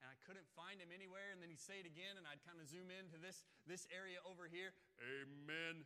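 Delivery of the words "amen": big, booming voice, long, resounding drawn-out amen. Retelling a man who called out during preaching: imitating a booming voice. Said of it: "this booming voice".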